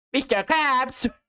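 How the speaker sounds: very high, squeaky cartoon voice. Acting out a crossover movie joke as SpongeBob: SpongeBob voice. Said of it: "then SpongeBob comes and goes".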